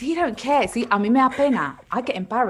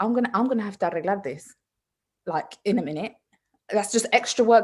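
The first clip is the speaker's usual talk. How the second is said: plain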